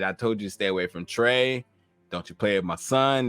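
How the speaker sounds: normal talking voice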